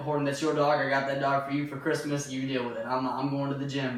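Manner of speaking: plain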